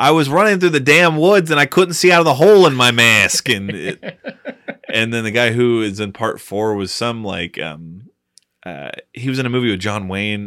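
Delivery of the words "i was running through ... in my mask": put-on heavy, thick New York accent, raised. Quoting the guy in part 2 of the series, in a thick new york accent. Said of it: "has the most thickest New York accent".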